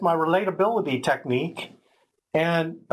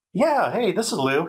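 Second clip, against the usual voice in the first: mock-nice, pleasant-sounding salesman voice, faster. Retelling what Lou, a sales guy, said: imitating Lou sounding nice. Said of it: "He sounded nice. He sounded like a nice guy".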